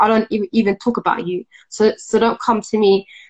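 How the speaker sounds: usual speaking voice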